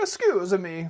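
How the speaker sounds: put-on loud, heavy Italian accent laid on thick. Retelling a lady's question in a toy section, thick Italian accent. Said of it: "she had like a really thick like Italian accent".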